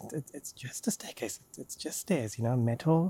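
muttering under breath. Voicing a character heading slowly down a staircase: muttering under her breath. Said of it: "muttering under her breath".

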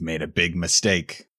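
growling through the words. Playing a disguised character in a role-play scene; growled. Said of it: "I'll growl out".

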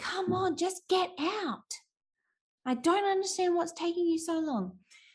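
annoyed, impatient, high-pitched yelling. Recounting yelling at her to get out of the car: retelling his own annoyed yelling. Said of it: "I yelled at her going".

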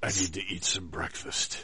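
mock serious, overdramatic voice. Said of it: "talks like this very seriously".

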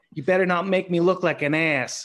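put-on high, loud Boston accent with laughter. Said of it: "in his Boston accent".

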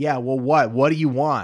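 loud, sharp, barked mock retort.

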